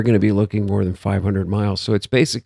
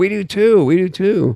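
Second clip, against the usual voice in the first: mock, very high, slow, drawn-out, insistent shouting; 11 semitones higher than usual. Retelling a reaction to a claim on screen: retelling own yelling at screen. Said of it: "and I'm yelling at the screen".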